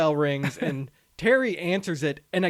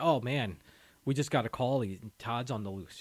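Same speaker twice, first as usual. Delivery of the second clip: put-on nonchalant, casual tone, lower and quieter; 6 semitones lower, 8 dB quieter than usual. Retelling how a character announces news: imitating a casual announcement. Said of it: "just says it casually".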